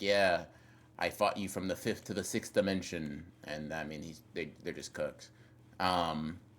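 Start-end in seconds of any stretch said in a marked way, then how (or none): none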